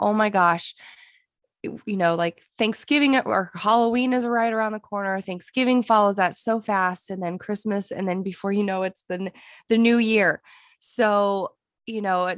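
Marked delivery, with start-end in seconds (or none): none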